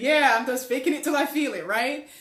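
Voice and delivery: spoken mid-laugh, light and amused. Retelling own answer on the plane: retelling own words while laughing. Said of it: "I laughed and I said".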